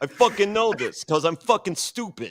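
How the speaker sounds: put-on New York/New Jersey accent. Mocking new york and new jersey stubbornness: new york/new jersey impression. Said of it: "I just did an impression of every single person from New York slash New Jersey".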